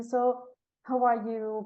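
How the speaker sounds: high, pitying, sorry-for-you tone. Retelling how people ask about being unemployed: imitating a pitying voice. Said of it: "in a pitying voice".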